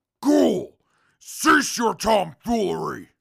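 high, loud, indignant tone.

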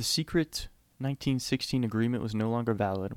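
normal talking voice

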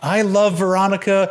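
high-pitched, screamed-out words. Recounting a movie scene to listeners, Ron Burgundy screaming impression. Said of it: "is screaming out".

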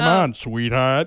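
very loud, booming call at full volume. Imitating a cartoon character in conversation: Fred Flintstone voice. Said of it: "Is that how he talks?".

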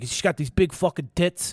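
clumsy, bad, put-on Italian accent. Retelling what a guy said while trying to talk italian, bad attempt at italian accent. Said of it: "He was like trying to talk Italian".

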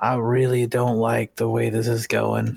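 hushed whisper. During a tabletop game, a character leans in to a companion, whispering. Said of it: "just kind of whisper".

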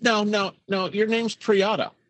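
ordinary talk

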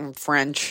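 mock dismissive tone. Acting out someone asked what language they took in school: imitating an eye-roll answer. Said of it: "with an eye roll".

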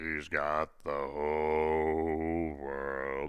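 dark, deep, very slow demonic voice. Retelling how a child spoke on a wrestling show: imitating a deep, dark, demonic voice. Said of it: "this deep, dark, demonic voice".

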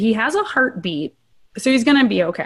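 ordinary delivery

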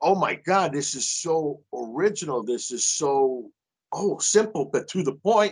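put-on very thick, slow, heavy Italian accent. Retelling what a man said after doing a triple take, very heavy, thick italian accent. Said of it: "in a very heavy, thick Italian accent".

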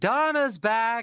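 put-on bright, cheerful, very high-pitched holler. Retelling how their dad wheeled their mom in and called out; imitating a cheerful holler. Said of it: "hollered, "Donna's back," in a cheerful voice".

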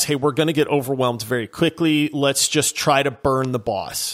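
ordinary delivery

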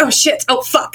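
startled, caught off guard, flustered cursing. A character, caught off guard while putting a room back in order, swears: flustered swearing. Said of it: "it's just so flustered out of nowhere".

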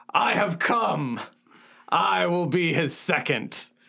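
slow, proclaiming delivery. Walking into a camp in character and announcing oneself: shouting in Orc. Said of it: "shouts in Orc".

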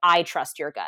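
heavy stress placed on the word I. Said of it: "not just trust your gut".

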